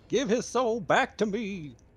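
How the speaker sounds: booming, loud, high-pitched pulpit preacher voice. Praying for a fallen companion to be brought back, the speaker uses a preacher voice. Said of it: "I'll start doing like the fucking preacher voice".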